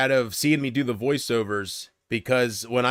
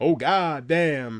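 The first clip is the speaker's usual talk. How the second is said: mock-angry, irritated old-man voice, cursing; 2 semitones higher than usual. Explaining where his voice comes from, the speaker does a mock-angry Angry Grandpa impression. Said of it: "My angry grandpa is just an impression".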